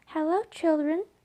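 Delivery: sugary, sweet, gentle tone. Reading a story aloud, someone greets the children in a sweet voice. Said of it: "someone said in a sweet voice".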